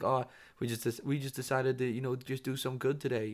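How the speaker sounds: partial put-on New Zealand accent. Mocking people who hand out money to homeless people, in a vague New Zealand-ish accent. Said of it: "like a mixed between New Zealand and don't know accent".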